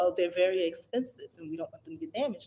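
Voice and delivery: really patronising, superior, condescending tone. Quoting a woman explaining why things aren't left out for guests: mock-condescending tone. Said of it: "she says it really condescending".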